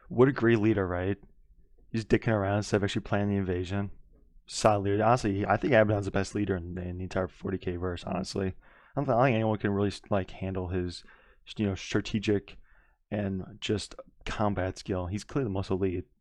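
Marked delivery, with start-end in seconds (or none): none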